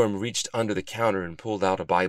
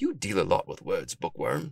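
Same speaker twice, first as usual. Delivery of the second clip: ordinary delivery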